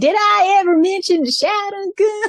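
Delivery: put-on very high country accent. Retelling how a dubbed character was made to sound: imitating a country hick accent. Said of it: "a country accent".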